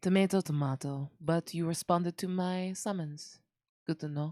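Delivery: very bad, terrible put-on French accent. A character speaks to another who answered the summons, in a very bad french accent. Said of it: "before I do this very bad French accent".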